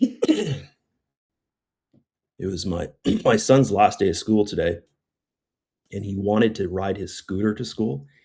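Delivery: hoarse, fading voice. Telling a story while losing voice, hoarse voice. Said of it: "I'm losing my voice".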